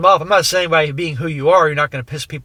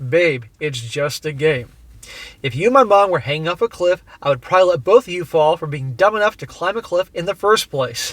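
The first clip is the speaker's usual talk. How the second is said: normal talking voice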